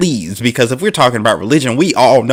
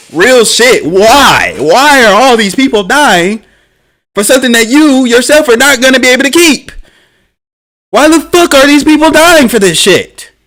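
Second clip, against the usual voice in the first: loud, shrill, very high-pitched ranting tirade; 12 semitones higher, 6 dB louder than usual. Speaking to a listener mid-rant, loud ranting. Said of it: "I'm sorry to get so loud".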